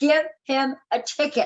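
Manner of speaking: acted-out screaming, demanding tone. Retelling being pulled over by a cop, imitating own screaming. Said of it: "I am literally screaming".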